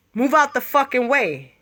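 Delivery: ordinary delivery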